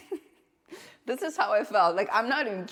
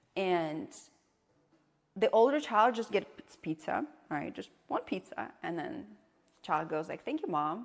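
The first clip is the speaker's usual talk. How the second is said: normal talking voice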